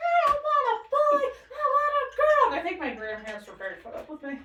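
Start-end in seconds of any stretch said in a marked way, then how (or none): 0.0-2.5 tearful crying scream, very high, very loud wail. Retelling a four-year-old's outburst over a new baby brother: imitating a childhood crying scream. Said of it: "I cried and I screamed".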